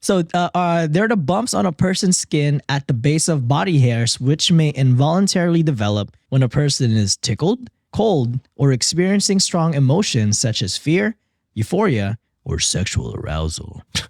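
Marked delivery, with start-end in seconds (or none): 12.4-13.8 low, soft, smutty, suggestive teasing delivery. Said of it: "I have to say it like that".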